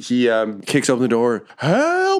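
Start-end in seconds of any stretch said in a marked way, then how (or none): 1.6-2.2 very high, stretched, drawn-out goblin yell. Voicing a goblin kicking open the door while burning up: goblin yelling for help. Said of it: "he just starts disintegrating from behind as he yells it".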